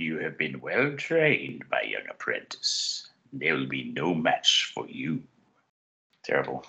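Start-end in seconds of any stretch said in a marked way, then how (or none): 0.0-5.2 low, sinister dark lord voice. After comparing someone to a Sith lord, the speaker does a Dark Lord of the Sith impression. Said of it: "He sounds like a Dark Lord of the Sith".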